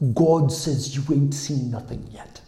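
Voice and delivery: woman's put-on New Zealand accent. Retelling how a little lady grabbed and spun the speaker, kiwi accent. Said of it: "in her best Kiwi accent".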